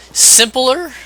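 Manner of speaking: voice breaks, jumping very high. Explaining a boss fight, the speaker's voice cracks mid-sentence. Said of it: "my voice cracked".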